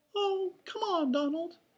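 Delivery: pleading, begging. Minnie answers Donald's refusal, pleading. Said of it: "Minnie pleaded".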